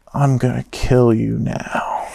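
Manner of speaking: limp, slow, low, drawn-out delivery with zero bite. Mocking how a TV villain delivers threats: imitating Tyler's unintimidating threat. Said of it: "and he's just not one of them".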